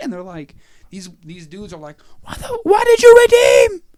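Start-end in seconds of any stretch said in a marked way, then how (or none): 2.2-3.7 high, loud crying scream, shrieking. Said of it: "they're on the phone screaming at him".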